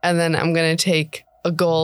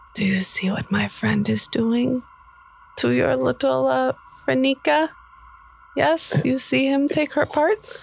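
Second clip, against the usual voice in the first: whispered, much higher; 8 semitones higher than usual. Role-playing a captor, speaking to the tied-up guy, whispering. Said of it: "I'm going to whisper and I'm going to say".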